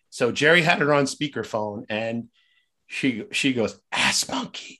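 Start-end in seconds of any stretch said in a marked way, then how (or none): 4.0-4.7 hushed, secretive whispering. Retelling a client saying the password over the phone: imitating a whispered password. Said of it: "she whispers it to us like this".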